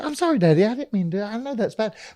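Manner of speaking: sweet, cute voice, very hushed, barely audible. Retelling what a woman said to him after laughing, cute voice. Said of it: "she goes in this cute voice".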